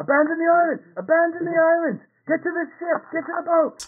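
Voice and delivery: frantic, panicked, high-pitched screaming. Describing people fleeing an island; people screaming. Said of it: "There are people screaming like".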